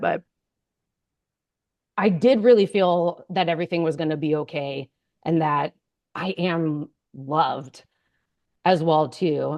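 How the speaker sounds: choked up, emotional catch, voice breaking. Speaker describing one of the most moving experiences of their life, choked up. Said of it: "I'm getting choked up talking about it".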